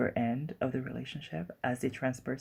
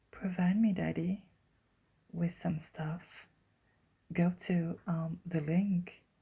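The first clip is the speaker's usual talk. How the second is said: put-on soft, gentle voice; 5 semitones higher than usual. Speaker plugging a link, switching to a put-on soft voice. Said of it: "let me take my soft voice".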